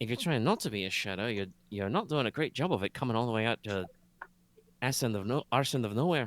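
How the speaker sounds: quiet, mumbled, half to herself, under-breath mutter. A storyteller voices a character who turns back to speak: muttering. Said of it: "turns back to mutter".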